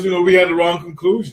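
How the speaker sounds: ordinary talk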